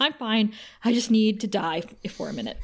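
mock out-of-breath panting voice. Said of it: "really out of breath".

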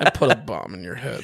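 low, annoyed, irked villain voice. Repeating the villain's line once more for the others: imitating the villain. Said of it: "I did it again".

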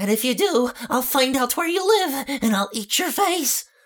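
very high-pitched, eerie, creepy clown voice. After a spoiler warning, the speaker does a Pennywise impression. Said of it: "That was my new Pennywise impression".

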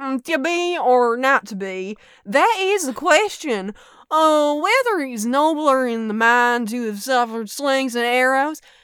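put-on loud voice with Southern accent. Retelling a class monologue performed for a professor: southern accent. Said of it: "We had to do a monologue in a Southern voice".

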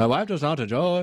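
put-on Irish accent. Trying an accent while talking about his wife and accents: put-on Irish accent. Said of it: "I don't think that's a very good Irish accent".

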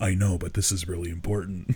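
intense deep voice. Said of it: "Intense, deep voice".

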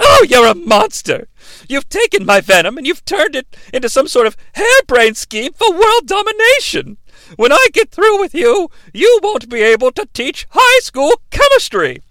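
high-pitched, haughty airs. Retelling a movie scene, quoting Pamela Isley: hoity-toity Pamela Isley voice. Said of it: "gets all hoity-toity and high and mighty".

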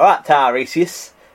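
put-on Yorkshire accent. Joking that a mythological name sounds Yorkshire: put-on Yorkshire accent. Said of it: "He sounds a bit Yorkshire, like".

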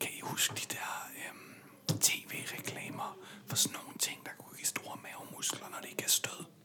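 quiet whispering. After the door is closed, the speaker asks the listeners a question, whispering. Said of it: "Jeg hvisker jeg lige lidt".

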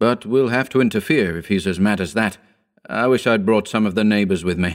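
plain reading voice

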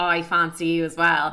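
normal talking voice

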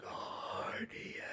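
faint, far-off, echoing whisper. As the word patron makes it glow, the narrator voices an echoing word in a faint, distant voice. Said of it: "you hear the word echo out in a very faint, distant voice".

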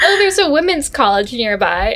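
plain

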